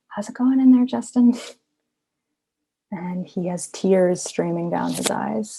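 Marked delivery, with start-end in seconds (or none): 0.1-1.3 whisper, higher. Retelling tiptoeing over to check on someone resting: imitating own whisper. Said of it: "I just whisper".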